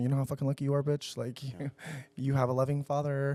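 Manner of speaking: whispered voice. Retelling words said to Ace while hugging him at bedtime: retelling a whisper. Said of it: "and I whisper him".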